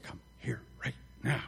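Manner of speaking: stern, hushed parental whisper. Speaker acts out what one parent said, in that quiet parent voice. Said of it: "one parent used that quiet voice".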